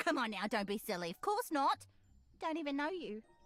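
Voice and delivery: London street accent, acted.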